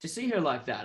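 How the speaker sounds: ordinary talk, nothing marked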